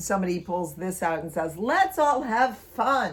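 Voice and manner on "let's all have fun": put-on Boston accent, very slow, loud, drawn out.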